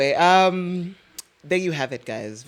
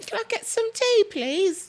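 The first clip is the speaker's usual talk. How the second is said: very high put-on British child accent; 4 dB quieter than usual. Mimicking toddlers who speak with British accents, imitating a British-accented toddler. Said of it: "British accents?".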